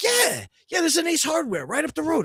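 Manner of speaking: put-on Yonkers New York accent with Spanish inflection.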